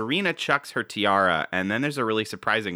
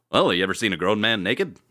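radio-like delivery, faster; 4 dB louder than usual. Speaker quoting a character's external voice as an Airplane pilot impression. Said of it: "very strange, almost radio-like delivery".

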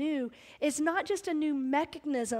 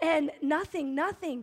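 plain

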